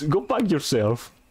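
quick blurted yell, kept small, acted out, toned down. Retelling a comic panel where a character shouts an insult: imitating a shout. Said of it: "just shouts".

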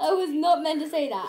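loud, helpless laughing through the words.

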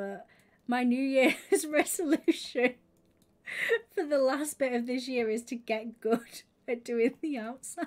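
laughing and giggling through the words.

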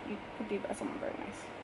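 quick quiet whisper.

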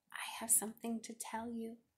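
tiny, very small, soft voice. Ruthie walks up to Mrs. Olson's desk to confess, in a very small voice. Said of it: "said Ruthie in a very small voice".

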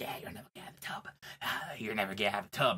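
soft, breathy whisper under the breath. Pitching a scene where a clown in the drain taunts Grandma: Pennywise whispering. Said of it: "whispering to her".

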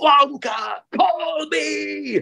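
mock shrill yell at the top of the lungs. Retelling how a teenager in the front row shouted at curtain call, imitating a teen shouting. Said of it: "he shouted at the top of his voice".

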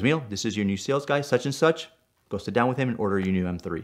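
ordinary talk

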